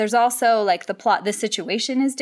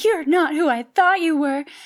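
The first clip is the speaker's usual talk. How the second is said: put-on very angsty teenage-girl voice, pitched up; 7 semitones higher than usual. Describing a plot-twist trope, the speaker voices a teen girl in an angsty teen girl voice. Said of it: "usually it's a teen girl saying".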